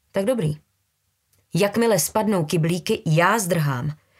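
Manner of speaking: ordinary delivery, nothing marked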